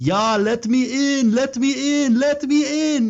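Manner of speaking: put-on drawn-out, very high and slow Danish accent. Retelling how Frederick, left outside, banged on the window, imitating Frederick's Danish accent. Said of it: "because he's got the Danish accent".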